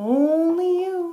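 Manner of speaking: slow, high, drawn-out wind voice. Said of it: "says the wind".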